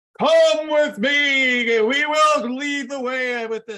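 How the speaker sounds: big booming voice, very high, loud and slow. Podcaster showing the big voice they say doesn't suit a podcast. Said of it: "big voice".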